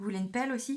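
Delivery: dry, sarcastic delivery.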